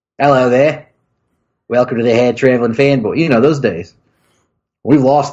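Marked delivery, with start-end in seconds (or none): 0.2-3.1 put-on New Zealand accent, fake. Recreating a greeting from the earliest episodes: put-on New Zealand accent. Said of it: "They found your New Zealand accent offensive".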